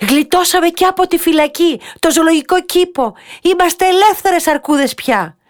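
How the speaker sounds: very high, loud, overjoyed joyful shout. Reading a children's story, a bear cries out after the escape from the zoo, shouting joyfully. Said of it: "φώναξε ολοχαρά".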